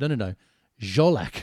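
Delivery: play-acted, slow, insistent, exasperated, angry delivery. Retelling a friend correcting his name's pronunciation: imitating a friend getting angry.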